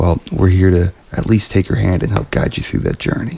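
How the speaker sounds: put-on chill, mellow public radio host voice. Opening the show, trying out a new voice: put-on chill public radio voice. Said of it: "You sound like you belong on public radio".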